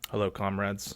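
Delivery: totally chilled, dissatisfied, barely bothered delivery. Retelling a parade leader greeting the troops: Xi Jinping impression. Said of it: "totally chilled out, dissatisfied look".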